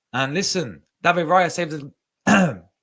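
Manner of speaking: cracking voice jumping high mid-phrase. A speaker reviewing a dead game for viewers: voice cracking. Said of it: "My voice cracked".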